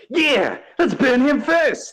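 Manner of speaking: very high, loud, shrill shout. Game master voicing someone in the crowd answering a player, shouting from the back. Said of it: "someone from the back shouts".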